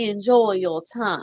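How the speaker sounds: put-on Savannah Southern accent. Retelling locking a woman in a jail cell, using a Savannah Southern accent. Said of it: "I think you want a Savannah".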